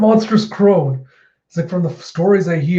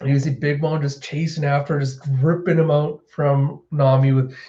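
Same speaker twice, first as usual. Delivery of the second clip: ordinary talk, nothing marked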